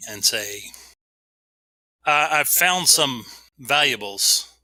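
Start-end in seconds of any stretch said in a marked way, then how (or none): 2.3-4.4 loud, projected calling-out voice. A player's character calls out to the rest of the party, yelling out. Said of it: "I'm gonna yell out to the rest of the party".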